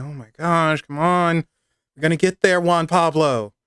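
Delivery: mock out-of-breath huffing and puffing. Retelling a woman climbing to a mountain village behind a man, imitating huffing and puffing. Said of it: "She's huffing and puffing".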